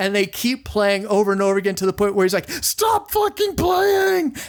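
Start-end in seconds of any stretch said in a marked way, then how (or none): 2.5-4.4 mock furious yelling, very high pitch. Retelling how someone got angry at a band that kept playing, retelling an angry yell. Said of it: "he's yelling at them".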